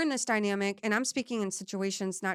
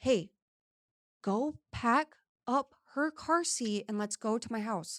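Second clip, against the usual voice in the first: whispering; 3 semitones higher than usual. Retelling telling a friend to pack up and leave: retelling a whisper. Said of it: "we're kinda whispering though".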